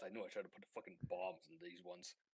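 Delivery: very quiet, low grumbling mutter under the breath. Voicing Pemberbot annoyed by interruptions: muttering under his breath. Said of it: "he just mutters under his breath".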